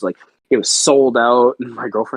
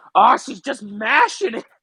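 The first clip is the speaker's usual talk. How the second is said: very high-pitched, shrill, hollered outburst; 12 semitones higher than usual. Retelling a TV scene where a character yells: imitating Frank yelling. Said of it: "he just yells out".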